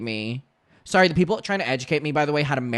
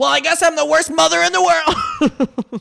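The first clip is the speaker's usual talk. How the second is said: mock very high, loud, snide, spiteful voice; 7 dB louder than usual. Recalling calling out a parent as a kid, imitating a spiteful parent. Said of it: "trying to be, like, spiteful".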